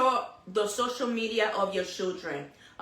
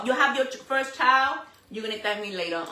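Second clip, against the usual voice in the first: ordinary delivery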